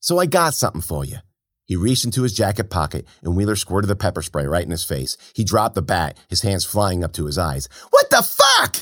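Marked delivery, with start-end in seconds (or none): 7.9-8.8 sudden, very high, shrill screaming outburst. A man hit in the face with pepper spray, screaming. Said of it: "He screamed".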